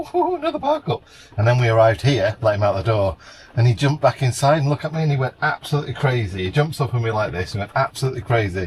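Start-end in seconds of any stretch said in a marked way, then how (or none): 0.0-1.0 squeaky, very high little dog voice. Imagining what the dog thinks at each new stop: voicing the dog's thoughts. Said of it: "He's like".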